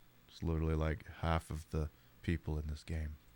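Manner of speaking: deep voice with creaky fry. Playing a game, describing how its cast talks, in a low deep voice with vocal fry. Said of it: "I'm speaking in a low, deep voice with huge vocal fry".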